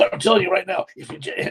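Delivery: eager, gushing, very excited put-on voice. Retelling the brother going on about Jesus: imitating someone so excited. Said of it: "he's so excited".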